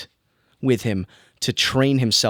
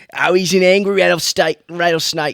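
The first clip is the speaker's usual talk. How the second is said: put-on Australian accent, higher and louder; 7 semitones higher, 6 dB louder than usual. Imitating the Crocodile Hunter talking about an animal: Steve Irwin impression. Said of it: "you just really like Australian accents".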